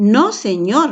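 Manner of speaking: strong, emphatic exclaiming. Reading a text aloud to show an exclamation, in a strong exclamatory tone. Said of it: "porque es una exclamación".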